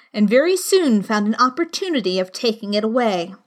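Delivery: ordinary delivery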